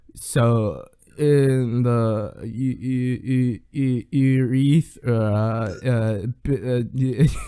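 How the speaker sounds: mock stammering, put-on stuttering speech. Retelling a video of yourself played back: imitating own stuttering speech. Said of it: "I was speaking like".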